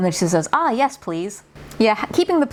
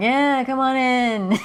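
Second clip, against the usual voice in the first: slurred words, higher and slower; 5 semitones higher than usual. Imitating a voice line to show how it sounds, slurred voice. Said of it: "it's very like slurred".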